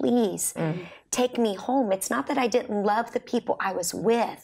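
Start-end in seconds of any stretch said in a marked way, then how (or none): 0.0-1.9 put-on pleading tone, much slower. Speaker recalls what they said to visiting family; retelling begging. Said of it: "and I'd have my bags packed and just beg them".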